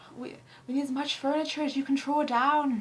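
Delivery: put-on loud try at an Irish accent. Quoting a film line as Fraffy says it, the speaker attempts Fraffy's Irish accent. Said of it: "I can't do an Irish accent".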